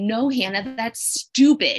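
drawn-out stage whisper, very slow. Retelling what a brother said back in a TV clip: imitating a half-whisper. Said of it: "he whispers back to me".

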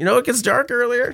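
high-pitched voice. Retelling own past excuse to another speaker: high-pitched voice. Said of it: "Your voice just got so high".

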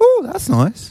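very high woman's voice. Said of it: "or she just goes".

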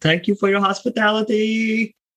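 very high, loud yelled call. Playing Fang, who calls after Copper as he walks away: yelling after someone walking away. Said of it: "Fang yells out at Copper as he walks away".

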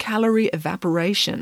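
ordinary delivery

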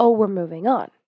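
plain

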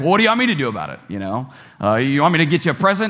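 mock snippy sarcastic snap with swooping pitch. Retelling how a woman snapped back at the lady beside her: mock-sarcastic snap. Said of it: "sort of sarcastically".

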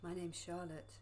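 soft, alluring, seductive voice. Introducing a character at the Light Workers Cafe: seductive voice. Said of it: "That was very seductive".

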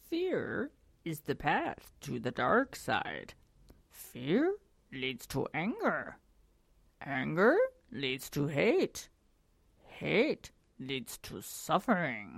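soft, hushed, swooping sing-song voice. Co-host reading a quote for the show, in a Yoda voice. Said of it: "I do the Yoda voice".

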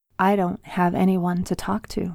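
ordinary delivery, nothing marked

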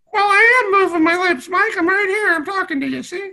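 put-on very high puppet dummy voice. Answering Mike as the puppet Mister Giggles: Mister Giggles puppet voice. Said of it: "Mister Giggles, you're fine".

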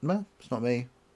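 cold, flat put-on voice. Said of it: "like a serial killer says".

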